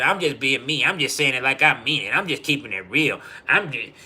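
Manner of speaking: put-on careless, unapologetic, disrespectful tone. Imitating blunt people who call their rudeness honesty: imitating disrespectful talk. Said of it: "that's what y'all be saying".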